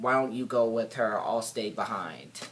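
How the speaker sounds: usual speaking voice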